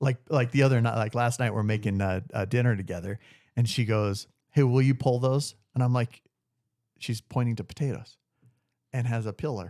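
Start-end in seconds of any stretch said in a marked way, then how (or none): 4.5-5.5 put-on small-town North Carolina accent. Retelling what his wife said while making dinner: imitating wife's north carolina accent. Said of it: "she's got this cute little accent".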